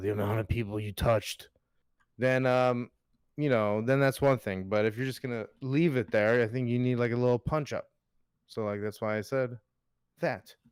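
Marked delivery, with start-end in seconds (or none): 0.0-1.5 creepy-sounding delivery, lower in pitch. A host showing how a line could be said, saying it in a creepy way. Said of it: "if you say it in a creepy way".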